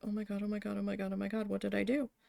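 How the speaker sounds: put-on panicked voice. Retelling being called to walk with someone at work: imitating own panic. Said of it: "panicking on the inside".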